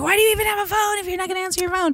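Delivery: put-on very high, fed-up, exasperated complaint. Retelling their own reaction when a parent won't answer calls, imitating a frustrated complaint. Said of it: "I get I get frustrated because I'm like".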